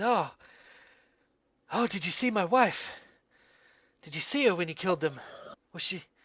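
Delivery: sudden burst of renewed, excited, elated energy. The narrator voices a character who suddenly looks renewed, excited and elated. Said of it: "He looks excited and elated".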